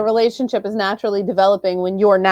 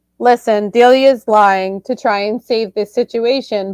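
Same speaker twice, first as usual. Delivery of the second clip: ordinary talk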